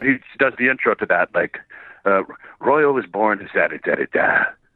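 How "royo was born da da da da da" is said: low, gravelly narrator read from the bottom of the voice. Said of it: "he has that gravelly thing at the bottom".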